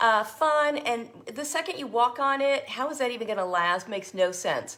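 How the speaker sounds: ordinary talk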